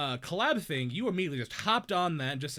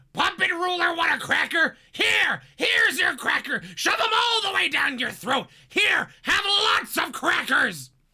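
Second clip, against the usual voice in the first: shrill, loud, screechy cartoon parrot voice; 11 semitones higher, 9 dB louder than usual. Asked for a funny quote, the speaker gives one in Iago voice. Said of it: "Is there an Iago quote that'd be funny".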